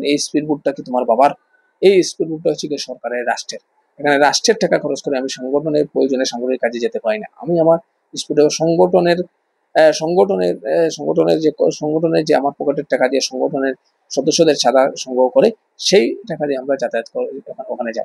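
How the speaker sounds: ordinary delivery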